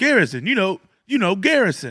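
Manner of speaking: confident, insistent, swooping delivery. Retelling a man insisting the speaker must know garrison: mimicking confident insistence. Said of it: "confidence in his voice".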